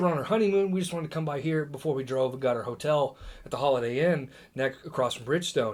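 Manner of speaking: ordinary talk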